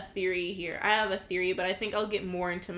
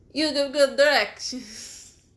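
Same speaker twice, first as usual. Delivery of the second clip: loud, high, over-the-top exaggerated Italian accent; 5 semitones higher, 5 dB louder than usual. The speaker retries a line to sound more italian: super italian accent. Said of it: "I gotta sound like super Italian".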